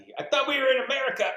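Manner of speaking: very high, shrill, loud comic squealing character voice. Asked to do a Randy impression: Randy impression. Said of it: "Can you do a Randy impression?".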